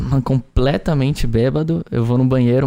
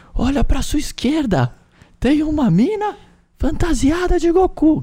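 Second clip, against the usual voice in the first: put-on very high, drawn-out hollering. Retelling how a friend shouted to get his attention, retelling a friend's shout. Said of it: "gritandaço assim".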